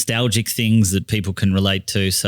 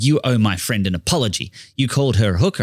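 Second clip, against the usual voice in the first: put-on outraged, furious, indignant woman's voice. Performer retells a woman at the bar demanding an apology: retelling a furious demand. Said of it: "furiously said".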